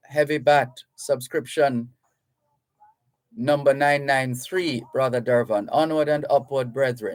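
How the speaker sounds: ordinary talk, nothing marked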